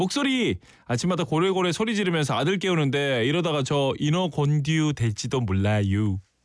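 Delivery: plain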